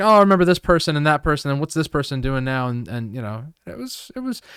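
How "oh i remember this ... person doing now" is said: plain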